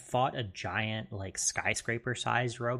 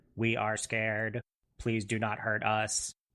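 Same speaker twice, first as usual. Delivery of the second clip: fake robotic voice. Retelling what robots in a game say during a fight: imitating robot voice. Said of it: "robot voices to say things like".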